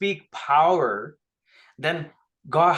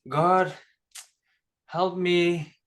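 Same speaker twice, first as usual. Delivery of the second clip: weak, feeble, powerless, low-energy voice. Mimicking how the listener sounds when pleading: Milka impression, weak and feeble. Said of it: "you don't sound powerful. You sound weak".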